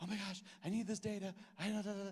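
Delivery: play-acted flustered, frantic, high, panicky blurt. Retelling an email to the lady at the state about needed data: retelling own panic. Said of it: "I was, like, panicking".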